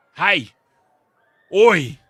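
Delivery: sudden, very loud, high-pitched yell. Calling out while playing a game: very loud shout. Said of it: "Sorry, that was very loud".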